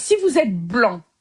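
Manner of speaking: deliberately slow, careful speech.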